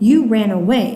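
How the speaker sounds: usual speaking voice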